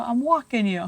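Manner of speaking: put-on New York accent. Answering whether there is a new york accent: put-on new york accent. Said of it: "so that's a New York accent".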